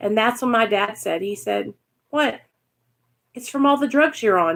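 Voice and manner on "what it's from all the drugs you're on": acted casual, unbothered, offhand tone. Retelling what dad said about the hair loss: imitating dad, nonchalant. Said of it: "Just so nonchalantly".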